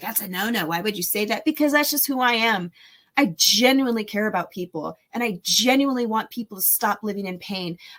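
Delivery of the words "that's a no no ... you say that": normal talking voice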